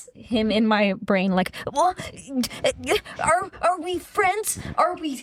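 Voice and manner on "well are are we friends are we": high, hesitant, unsure, faltering speech. Act out the one who got scared and couldn't commit, in an impression of him. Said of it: "That's a good impression of him".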